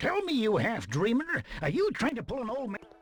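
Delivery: put-on Scottish accent. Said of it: "turbo thick accent. Scottish accent or something".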